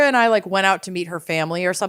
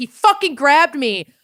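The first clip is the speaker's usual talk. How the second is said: mock enraged screaming outburst, pitched up; 7 semitones higher, 3 dB louder than usual. Recounting the moment a guy grabbed them as they walked through, retelling furious screaming. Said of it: "I was just screaming like".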